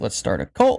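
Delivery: normal talking voice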